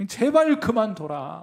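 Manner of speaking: slow, loud, drawn-out taunting tone like a tempter.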